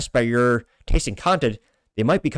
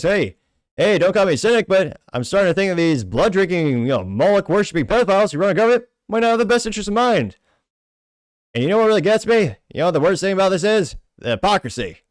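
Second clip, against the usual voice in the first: put-on deadpan comedian voice, pitched higher; 6 semitones higher than usual. Reading a posted comment aloud as an impression: bad Norm Macdonald impression. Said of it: "the worst Norm Macdonald impression you heard".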